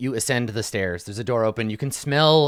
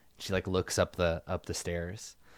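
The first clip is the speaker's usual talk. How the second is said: ordinary delivery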